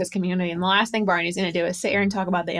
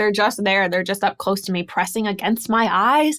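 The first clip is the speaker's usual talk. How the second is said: usual speaking voice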